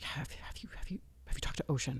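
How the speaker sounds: trembling, shaking voice, barely above a whisper. Recounting a phone call from the listener's mom, imitating a shaking voice. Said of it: "the way it was shaking".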